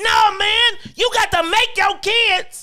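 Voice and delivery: very shrill, very high, loud all-out screaming. Retelling how they reacted while watching a show, retelling a scream at the TV. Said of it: "I was screaming at the TV like".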